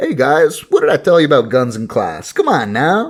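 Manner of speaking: very casual, unbothered, offhand voice, somewhat high. Retelling a creature's line to a class after gunfire: imitating a casual tone. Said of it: "And it's very casual".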